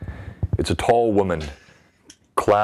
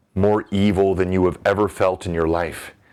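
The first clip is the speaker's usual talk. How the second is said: ordinary delivery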